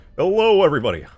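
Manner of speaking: very loud, high belting. Told they could imitate Markiplier, the speaker tries it: Markiplier impression. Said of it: "impression of Markiplier".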